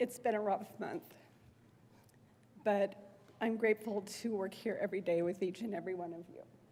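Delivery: emotional, touched voice. Thanking colleagues on the Senate floor after a rough month, getting emotional. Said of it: "I didn't think I was gonna get emotional".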